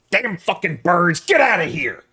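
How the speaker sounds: fed-up, loud, high, irritated shout from a distance. Voicing Dikaios yelling at birds from outside the tents: annoyed shouting. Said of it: "Dikaios shouting from outside the tents".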